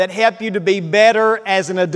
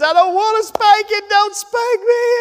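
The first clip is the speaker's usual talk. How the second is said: very high, tearful, pleading child voice, put-on and crying; 12 semitones higher than usual. Retelling what a girl said when told she'd get a spanking: imitating a child crying and begging. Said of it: "she starts crying and begging".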